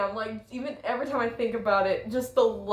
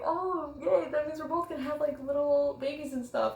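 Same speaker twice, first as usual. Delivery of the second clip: happy, excited, thrilled burst of gushing delight; 4 semitones higher, 8 dB quieter than usual. Retelling being happy about playing a game: imitating excited delight. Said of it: "I was so happy and excited".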